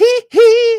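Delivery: very high, loud pop-star squeal. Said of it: "the [name] glove".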